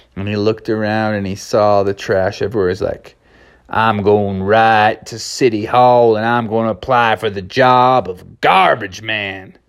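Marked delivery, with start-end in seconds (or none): 3.7-9.5 easy, relaxed southwestern drawl. Telling a story aloud, voicing the horse character, in a southwestern drawl. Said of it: "the horse was talking with a nice southwestern drawl".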